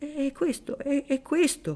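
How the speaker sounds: quavering, unsteady delivery. The former hatter's wife speaks before the dinner guests in a trembling voice. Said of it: "disse con voce tremante".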